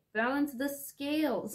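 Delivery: yelling, high-pitched and loud.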